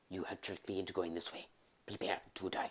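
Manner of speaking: very low, soft, murmured character voice. Voicing C-3PO lost in the desert in an Inigo Montoya voice. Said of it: "As Inigo Montoya".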